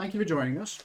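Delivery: talking with mouth full. Thanking the players for joining, talking with mouth full. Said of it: "I'm sorry I'm talking about my mouth full".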